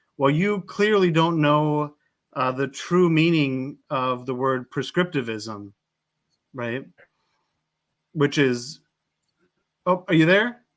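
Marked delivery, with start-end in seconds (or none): none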